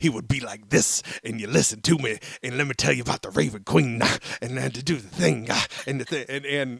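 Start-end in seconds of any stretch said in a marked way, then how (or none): 1.2-6.2 preacher holding forth in sermon voice.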